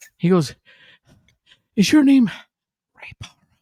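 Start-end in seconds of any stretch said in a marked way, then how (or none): 1.8-3.3 put-on breathless, winded, very high-pitched raised voice. Retelling how a running fan spoke to him: imitating someone out of breath. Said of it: "he's out of breath".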